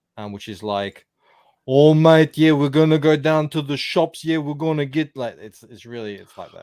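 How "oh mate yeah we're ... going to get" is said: put-on very loud Italian-style Australian accent. Showing how Italians do an Aussie accent, in an Italian take on Aussie accent. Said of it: "the Italian version of an Aussie accent".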